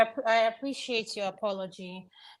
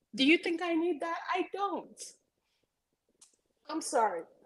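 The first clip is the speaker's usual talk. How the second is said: moved, overcome with emotion, voice pitched up; 7 semitones higher, 4 dB quieter than usual. Thanking people for kind words, getting emotional. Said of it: "I'm getting emotional".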